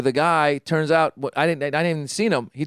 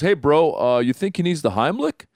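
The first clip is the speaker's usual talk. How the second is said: put-on Western voice, faster pace. Retelling a choking incident at lunch, doing Thomas Haden Church's Western voice. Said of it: "He's kind of like like Western".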